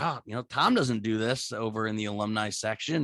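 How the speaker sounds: ordinary delivery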